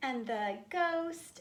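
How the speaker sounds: ordinary delivery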